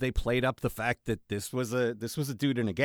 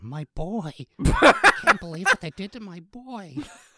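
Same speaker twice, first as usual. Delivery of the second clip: high, loud cartoon mom voice, pitch swinging wide; 7 semitones higher, 8 dB louder than usual. Recalling a TikTok of a Godfather scene done as Marge, Marge voice. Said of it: "doing a perfect Marge voice".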